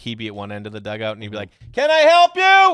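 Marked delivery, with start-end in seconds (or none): 1.7-2.7 shrill, very high, booming, slow, drawn-out taunting tone. Retelling a dugout bit aimed at a batter: imitating a teammate's trash talk. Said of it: "one of the greatest trash talkers".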